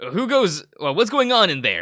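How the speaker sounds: very high-pitched, loud yelling. Voicing a guard who yells down the hall at a prisoner: guard yelling down a hall. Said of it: "A guard yelling down the hall".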